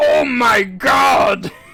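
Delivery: shrill, booming, very high wail at full blast. Retelling what Wario says in a Mario Party game when he loses: Wario voice. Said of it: "Wario's voice ... when he loses, he goes".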